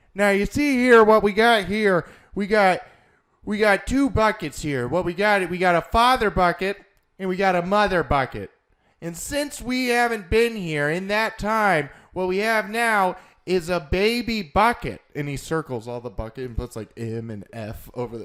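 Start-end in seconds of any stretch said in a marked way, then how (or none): 0.2-15.0 very high, very loud, belted sportscaster voice. Retelling a TV segment about buckets: John Madden impression. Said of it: "That does not sound like John Madden".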